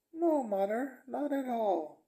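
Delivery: very high-pitched woman's voice. Retelling a movie's ending, a daughter answers her mother, imitating a woman's voice. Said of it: "Again in the woman voice".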